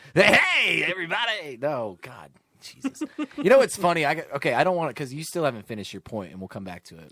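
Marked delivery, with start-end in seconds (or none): 0.1-1.5 big, loud, high on-air radio host voice. Giving Stitch a hard time about his voice, doing Stitch's big radio voice. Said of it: "Yeah, my radio voice".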